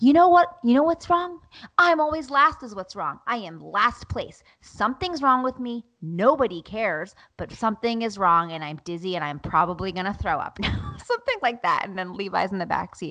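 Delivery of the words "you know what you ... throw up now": upset, ranting outburst breaking out. Retelling an outburst in the car while feeling dizzy: retelling her own outburst. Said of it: "And I was like".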